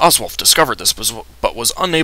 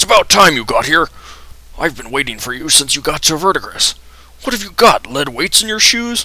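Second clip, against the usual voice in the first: put-on old dwarf voice blurting it out; 4 semitones higher, 3 dB louder than usual. Game master voicing an old dwarf greeting the players at the door, blurting. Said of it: "he blurts".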